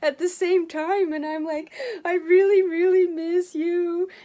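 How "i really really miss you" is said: tearful, crying through the words, raised voice. Retelling words said aloud while vacuuming up old litter: retelling tearful words. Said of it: "I'm vacuuming and I'm crying".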